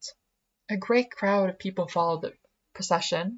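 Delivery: ordinary delivery, nothing marked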